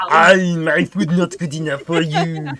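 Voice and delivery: put-on loud, angry shouting in an Austrian accent. Playing the character Romulus, now enraged, angry Romulus with Arnold Schwarzenegger twist. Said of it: "You've activated angry Romulus".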